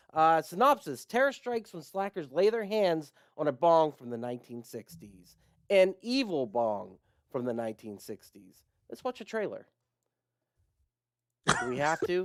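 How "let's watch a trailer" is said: extremely wholesome, good-natured, squeaky-clean friendly delivery. Suggesting to the others that they watch a trailer: most wholesome way possible. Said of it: "You said that in the most wholesome way possible".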